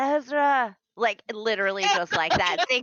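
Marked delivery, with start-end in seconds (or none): 0.0-0.8 name stretched out like a yell. Voicing a character calling out a name: whispered yelling. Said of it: "thinks she's being louder than she is".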